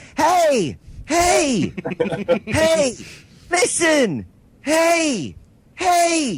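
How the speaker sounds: very high little voice, each "hey" stretched out. A gamer describes a companion pestering them mid boss fight; little Navi voice. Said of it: "this little voice flitting around your head".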